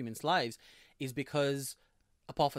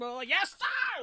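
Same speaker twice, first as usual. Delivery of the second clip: mock, annoying, screechy shout, pitched higher; 3 dB louder than usual. Retelling how a character suddenly yelled: imitating an annoying screech. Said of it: "this really annoying".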